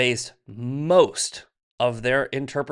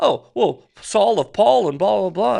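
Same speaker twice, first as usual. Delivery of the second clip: dismissive mocking voice, raised, loud and creaky; 8 semitones higher, 7 dB louder than usual. Mocking how Tucker talks about the Bible: imitating Tucker. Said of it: "where he's like".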